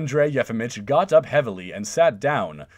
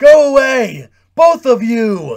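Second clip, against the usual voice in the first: very loud, high, drawn-out shout, unlike usual voice; 11 semitones higher, 12 dB louder than usual. A man, fists raised above his head, orders two visitors out: shouting in a voice unlike his own. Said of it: "he shouted in a voice unlike his own".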